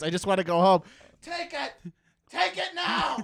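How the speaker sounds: very high-pitched, escalating put-on holler. Recalling nights stuck in a line wanting to go home, retelling yelling out the window. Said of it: "Just yelling out the window".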